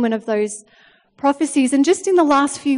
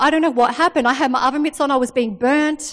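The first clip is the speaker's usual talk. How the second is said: ordinary talk, nothing marked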